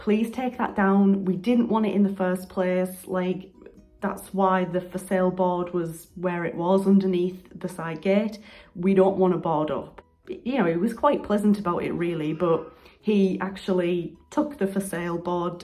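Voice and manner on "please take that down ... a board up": ordinary talk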